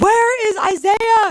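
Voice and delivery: mock, shrill, very high calling-out yell. Retelling how she searched for a missing player: imitating her own yelling. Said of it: "yelling at people".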